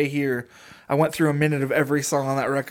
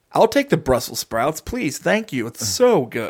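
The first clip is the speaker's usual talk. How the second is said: eerie, polite, swooping, creepy newscaster voice; 4 dB louder than usual. At an imagined Thanksgiving dinner, imitating a relative who talks like news and weather. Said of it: "you have a guy like that in your family".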